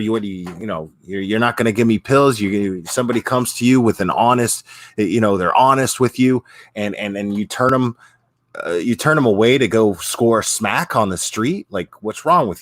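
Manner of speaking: normal talking voice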